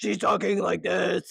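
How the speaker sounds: put-on possessed demonic devil voice. Describing a C-list exorcism movie, a speaker mimics the possessed woman's devil voice. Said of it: "and she's the devil".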